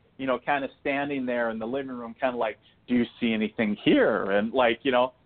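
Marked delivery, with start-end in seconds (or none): 2.9-4.3 mock, playful, jokingly teasing ribbing. Retelling a mother-in-law's question in the living room: imitating someone jokingly mocking. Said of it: "she was kind of jokingly mocking it".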